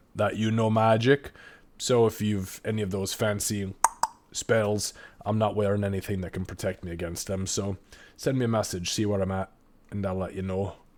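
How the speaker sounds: usual speaking voice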